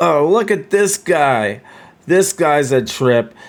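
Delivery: amused, loud, high, talking through laughter. Voicing a city guard amused by a chicken dance: guard laughing while talking. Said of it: "one of the guards will start to laugh".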